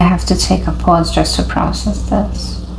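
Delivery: ordinary delivery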